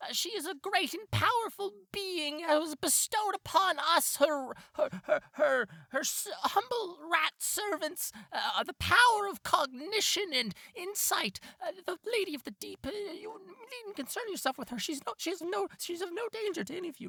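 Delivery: very high, squeaky little rat voice.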